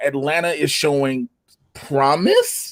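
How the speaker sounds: "promise" lifted with a question-like rising pitch. Discussing a team that is showing promise, question-like rise on 'promise'. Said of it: "You see how I say it with like the question mark in it?".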